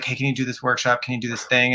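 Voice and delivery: put-on whispering. Retelling how the playwright would ask about workshops: imitating someone whispering. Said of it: "whisper in my ear".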